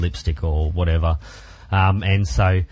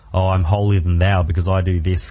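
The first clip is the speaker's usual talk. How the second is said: ordinary delivery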